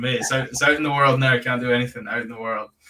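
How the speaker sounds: ordinary delivery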